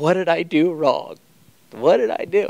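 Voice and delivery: high, tearful, crying, pleading voice. Retelling how dad cried at the kids: imitating dad crying. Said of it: "he starts to cry".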